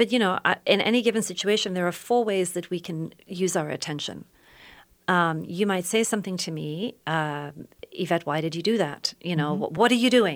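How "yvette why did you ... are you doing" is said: annoyed, accusing, impatient, critical tone. Showing how someone might say a line: annoyed, accusing tone. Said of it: "That tone is definitely a tone".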